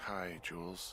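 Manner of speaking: drowsy, worn-out, tired, sleepy voice. Told to get out of bed and pick up the radio, a character answers, tired and sleepy. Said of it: "you sound tired".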